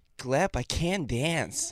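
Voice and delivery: high, over-the-top, most American accent possible. Asked to do the most American accent possible, the speaker tries; exaggerated American accent. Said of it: "try to do like the most American accent you can do".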